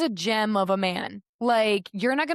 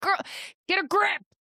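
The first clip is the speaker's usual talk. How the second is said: acted, very high-pitched, mild yell; 10 semitones higher than usual. Recalling watching a show and yelling at the screen, retelling screaming at the tv. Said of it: "I was screaming at the T V like".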